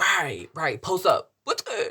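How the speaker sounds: slow, swooping macho alpha tough-guy tone. Retelling a friend's reply on hearing of the insult: imitating an alpha tough-guy tone. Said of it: "it's giving alpha vibes".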